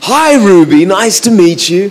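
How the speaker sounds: voice used for talking to toddlers. Showing how they greeted a mum's baby daughter: talking-to-kids voice. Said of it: "That's my best kid's voice".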